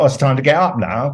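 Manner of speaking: ordinary talk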